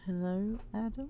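uneasy, awkward tone. Playing a character who awkwardly walks up to greet someone: awkward greeting in character. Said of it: "Rose is kinda gonna awkwardly go up to them and be like".

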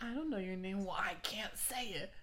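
high ghoulish put-on voice. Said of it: "Wait, do it right now".

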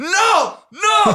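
very high, shrill yelled shout. Retelling hearing news while driving, re-enacting own yelling. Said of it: "Y empecé a gritar".

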